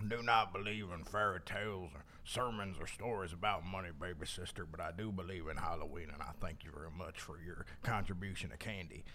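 low, hushed, put-on hobo voice. Retelling trick-or-treating in character on the lawn, in a halloween character voice. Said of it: "I was talking like this".

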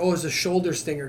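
usual speaking voice

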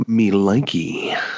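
unsettling, creepy put-on voice. Reacting to a gaming trick with a playful remark: creepy put-on voice. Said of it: "When you do that voice, it's so creepy".

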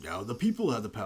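plain

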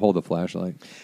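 low, soft, gruff dad voice, quietly barked. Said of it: "it's like".

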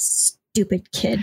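muttering under breath. Voicing Hera staring out at a ship: muttering under her breath. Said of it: "she just kind of mutters under her breath".

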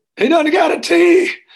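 shrill, very high, loud scream. Retelling noticing a fake play before the snap: imitating own screaming. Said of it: "And I started screaming".

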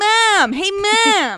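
put-on high, loud New Jersey accent, "ma'am" stretched. Doing an impression for the others: Jared Leto's New Jersey accent. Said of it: "Jared Leto's New Jersey accent".

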